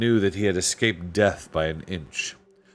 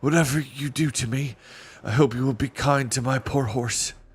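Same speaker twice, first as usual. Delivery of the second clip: feeble, weak voice, barely holding up; 4 semitones higher than usual. Narrator reading Caspian's words to the strangers who bandaged him, in a feeble voice. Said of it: "said Caspian in a feeble voice".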